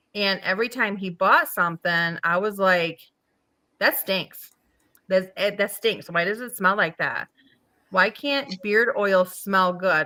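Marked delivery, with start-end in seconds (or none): none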